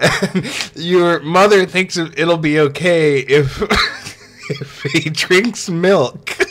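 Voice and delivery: speaking while fighting off laughter. Retelling the story of a game, laughing while talking. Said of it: "I can't even get through this without laughing".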